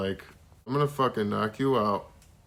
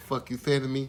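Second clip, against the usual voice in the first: put-on boxer voice with lisp, higher; 4 semitones higher than usual. Imagining a boxer working retail, imitating Mike Tyson. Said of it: "you do a much better Mike Tyson".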